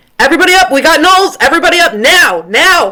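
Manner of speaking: very high, loud, urgent, rousing, alarmed shout. Playing a character who spots gnolls near the camp, shouting alarm. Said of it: "I immediately am shouting".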